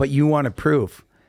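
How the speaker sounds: ordinary delivery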